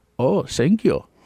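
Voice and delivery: put-on thick, heavy, hardcore German accent. Retelling a German customer thanking for free chili: heavy German accent. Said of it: "super German, like, hardcore accent".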